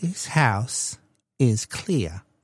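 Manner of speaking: small, quiet little lady voice. Telling a story about an exorcised house, Poltergeist little lady impression. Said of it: "That was my impression of that little lady".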